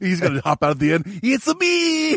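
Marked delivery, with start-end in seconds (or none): 1.2-2.2 very high-pitched cartoon Italian accent. Acting out a man hopping out from the back at the end, Mario voice. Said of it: "Why does he sound like Mario?".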